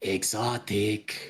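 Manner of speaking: sly, voiced, half-whispered stage whisper. Playing a character nudging a companion after a giggle: half-whisper. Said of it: "he's just gonna whisper".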